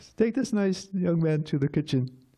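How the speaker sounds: very high-pitched little voice. Retelling arriving at the temple, imitating Jai Tirtha's very high voice. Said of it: "has a very high voice".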